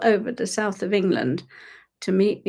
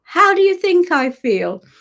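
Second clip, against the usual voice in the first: mock very high, shrill, loud shout; 10 semitones higher, 5 dB louder than usual. Retelling what a tree said back: imitating a tree shouting. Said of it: "he literally shouted".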